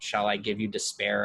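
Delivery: ordinary delivery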